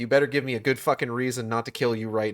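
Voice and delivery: put-on threatening character voice. Retelling a game scene, imitating Fury. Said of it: "Fury's just like".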